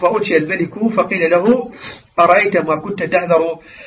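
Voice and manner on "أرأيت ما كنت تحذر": ordinary talk, nothing marked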